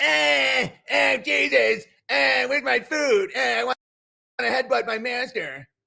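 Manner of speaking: high, creaky, rough cartoon voice, poorly done. Mocking how another comedian makes fun of people: shitty knockoff Cartman voice. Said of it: "a shitty knockoff Cartman voice".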